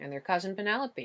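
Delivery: ordinary delivery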